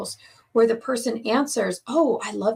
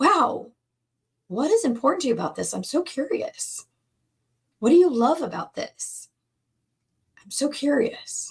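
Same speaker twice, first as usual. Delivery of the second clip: openly interested, genuinely curious, inviting tone; 3 semitones higher than usual. A speaker demonstrates what to say to a loved one while listening, curious, interested tone. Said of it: "In that tone of voice".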